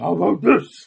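very loud, intense heroic voice. Recalling a fight scene from the film: Batman voice. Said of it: "his standard Bat voice".

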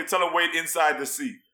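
ordinary talk

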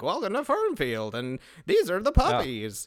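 high, swooping, sing-song voiceover narration. Retelling a movie's opening voiceover: imitating Don Knotts voiceover. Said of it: "that's a good impression".

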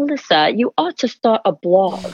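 put-on British accent throughout. Quoting a friend who suggests starting a blog: imitating a friend's British accent. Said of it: "with her British accent".

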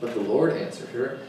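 usual speaking voice

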